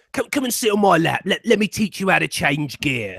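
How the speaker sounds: put-on low, creepy voice. Retelling the worst line done in that voice: creepy pedo voice. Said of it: "Do the pedo voice".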